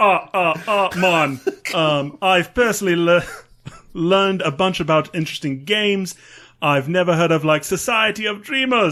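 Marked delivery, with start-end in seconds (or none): 2.2-8.9 British accent drifting in, rattled off quickly. Trying out a Jamaican accent while plugging the show, drifting into a British accent. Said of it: "You're definitely going British now".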